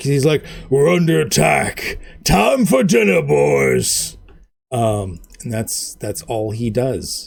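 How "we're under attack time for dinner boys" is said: gruff, rough, swooping orc boss yelling. Narrator voices the orc boss calling out to his minions; orc boss shouting. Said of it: "he he shouts out".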